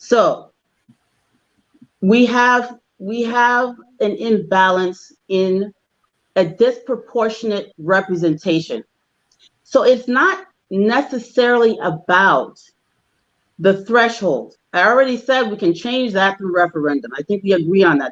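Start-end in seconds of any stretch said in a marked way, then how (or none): 0.0-14.6 very slow, unhurried, deliberate speech. Making a point of clarification, speaking slowly. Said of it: "So I'm going to say this slow, slowly".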